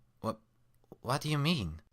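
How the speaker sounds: high, dry croak. Narrating a story and reading Twilight's reply, croaking. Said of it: "Twilight croaked".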